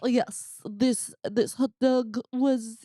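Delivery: put-on chef voice with French accent. A host reviews a hot dog like a Michelin critic, in Eric Ripert French accent. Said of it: "That is like spot on French accent".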